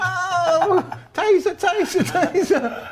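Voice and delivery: very high, acted shout in London accent. Mocking police who shout the brand name while tasering someone; mock police shout, London accent. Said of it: "they do it in a London accent".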